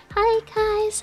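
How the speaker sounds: put-on high anime girl voice. A streamer demonstrates the voice they won't use on stream: pitched-up anime girl voice. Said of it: "pitch up my voice".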